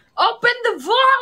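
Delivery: very high, shrill, loud yelling. Urging the other speaker to open the vault: yelling. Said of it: "Stop yelling at me".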